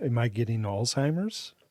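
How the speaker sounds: ordinary delivery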